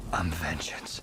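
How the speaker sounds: breathy, whispered hero voice. Speaking a line in a trailer: good Batman voice. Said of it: "That's a good Batman voice right there".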